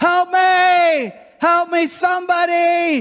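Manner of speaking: very high, very slow scream, "me" stretched. Telling a story about a man hanging from a branch, retelling screams for help. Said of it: "And he's screaming".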